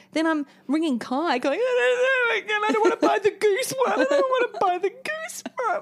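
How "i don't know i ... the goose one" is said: very high, almost crying in frustration. Retelling a phone call to Kai from a store: imitating own frustrated near-tears voice. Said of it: "almost in tears, so frustrated".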